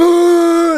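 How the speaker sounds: very high, very loud, drawn-out booing. Telling how everyone turned on them, imitating a booing crowd. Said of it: "But everyone's like".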